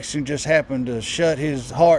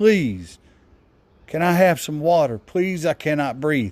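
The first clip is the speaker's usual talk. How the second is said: mock desperate pleading, begging voice. Retelling a pinned man's pleas to officers: imitating someone begging. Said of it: "He was begging".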